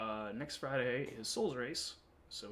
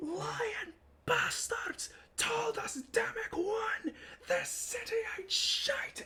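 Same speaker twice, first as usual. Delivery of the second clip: very high, shrill, angry screeching dwarf voice; 4 dB louder than usual. A storyteller voices a dwarf in front of a burning inn, screaming dwarf. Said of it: "the one dwarf screams out and goes".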